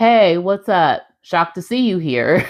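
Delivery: put-on flat monotone delivery. Retelling a reality show scene, imitating a cast member: monotone voice. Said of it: "Tim's voice is so monotone sometimes".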